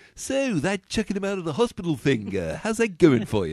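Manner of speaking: very high, loud, swooping cartoon voice. Imagining a film scene voiced by Stewie Griffin: Stewie Griffin voice. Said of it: "I could hear Stewie Griffin's voice going".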